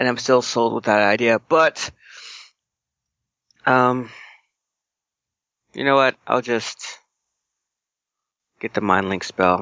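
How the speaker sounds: beaten, dejected, sad voice. Settling for the Mind Link spell instead of the original plan, sound defeated. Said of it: "You sound so defeated".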